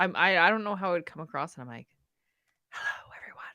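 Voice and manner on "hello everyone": theatrical, hushed, dramatic stage whisper. Re-enacting own earlier greeting to listeners: mock stage whisper. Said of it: "It's more of a stage whisper".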